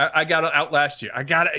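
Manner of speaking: ordinary talk, nothing marked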